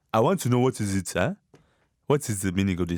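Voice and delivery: exaggerated, heavy, put-on Nigerian accent. Mimicking how people react, exaggerated Nigerian accent. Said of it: "makes it sound so much more Nigerian".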